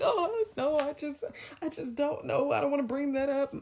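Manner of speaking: put-on weepy voice. Retelling how a man faked crying when asked about the incident, imitating fake crying voice. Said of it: "but like crying voice".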